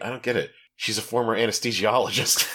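acted muttering under one's breath. Describing a movie scene, quoting a scientist: retelling a mutter under breath. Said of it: "kind of just like under his breath".

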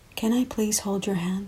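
soft, hushed, quiet voice. Alberto, lying on his bed, asks the narrator something; asking softly. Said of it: "he asked softly".

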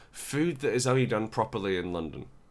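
normal talking voice

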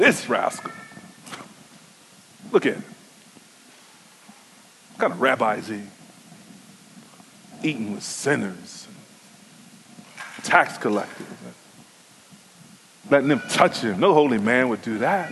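very low, hushed, disapproving grumble. Explaining verse 2, the speaker voices the Pharisees' complaint, in mock grumbling. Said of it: "the Pharisees say it with grumbling".

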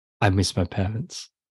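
soft, quiet, hushed, under-the-breath delivery. Retelling a line from the movie: quiet, imitating Keanu Reeves' Batman. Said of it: "Keanu Reeves as Batman just says quietly".

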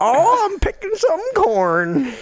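very high, swooping put-on hillbilly accent. Telling someone their voice came off as hillbilly, then demonstrating a hillbilly voice. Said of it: "hillbilly is kind of like".

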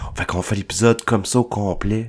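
seductive put-on sensual voice. Co-host on an episode, putting on a sensual voice. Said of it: "Avec une voix sensuelle".

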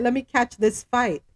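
ordinary talk, nothing marked

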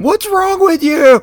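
very high, loud, berating yell. Picturing the other speaker yelling at a player, imitating someone yelling. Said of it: "picturing you just yelling at him".

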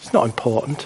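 low, belittling, dismissive voice. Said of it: "There'll be the diminishing voice".

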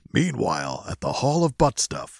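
put-on old-school superhero voiceover, dramatic and swooping. Joking about a movie, doing the old Justice League voiceover guy. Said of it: "You got a good announcer voice".

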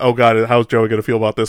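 plain

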